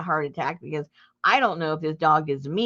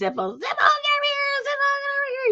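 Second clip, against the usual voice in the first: mock, very high, swooping, frantic, crazed screaming. Retelling calling a dog back, imitating own screaming and hollering. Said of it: "I'm screaming and hollering at Zippo".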